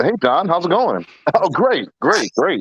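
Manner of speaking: put-on, polite, chatty phone voice.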